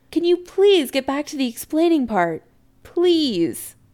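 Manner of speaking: high, pleading, just short of hysterical. A son speaking to his mother, just short of hysterical. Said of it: "just this side of hysterical".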